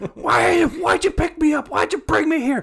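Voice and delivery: acted-out yelling. Describing a scene, acting out a character yelling at an old man: retelling a scream. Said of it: "he's just screaming at an old".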